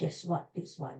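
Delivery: very quiet, breathy, hushed whisper. Speaker telling listeners about a Mother's Day outing, whispering. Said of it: "I don't know why I'm whispering".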